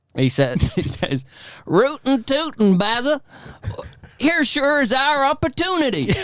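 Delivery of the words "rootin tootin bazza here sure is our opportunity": put-on very high-pitched, gummy, toothless old-West prospector voice. Playing a tobacco-spitting man with a jug addressing Bazza, in a toothless Western character voice. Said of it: "this toothless uh, Western".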